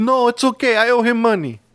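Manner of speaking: put-on Polish accent. Speaker retells a man's reply about his uncle: imitating a polish accent. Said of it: "this man has the accent and everything".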